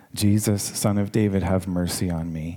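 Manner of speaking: ordinary talk, nothing marked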